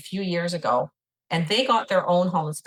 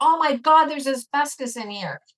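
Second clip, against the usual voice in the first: acted, high-pitched exclamation yelled out; 8 semitones higher, 3 dB louder than usual. Retelling what a home inspector said in the attic: imitating someone yelling.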